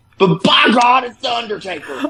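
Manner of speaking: high-pitched ringside wrestling announcer call. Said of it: "this is my best J R impression".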